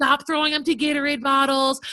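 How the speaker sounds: put-on yelling. Retelling yelling at kids: imitating own yelling. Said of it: "I'm yelling".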